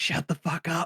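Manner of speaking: hushed whisper. Retelling what a four-year-old said to Trump: imitating a whisper. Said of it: "He just whispered to him".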